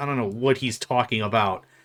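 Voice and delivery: ordinary talk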